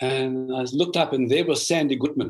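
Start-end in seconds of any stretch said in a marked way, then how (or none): none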